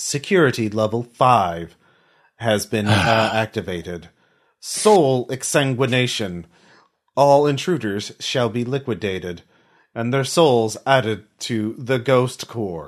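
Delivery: level, calm, computerized robotic announcer voice. Narrating a scene where the lights turn red, as the system: calm computerized voice. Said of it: "a calm computerized voice says".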